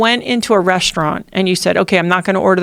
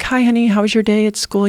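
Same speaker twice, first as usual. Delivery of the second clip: put-on sweet, sugary, fake nice tone. Retelling greeting a daughter getting in the car: imitating own fake nice tone. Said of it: "the fake nice tone".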